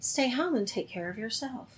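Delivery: hushed, very quiet, soft and gentle voice. Telling how they woke up sick, quoting a soft, gentle voice. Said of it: "this soft, gentle voice said".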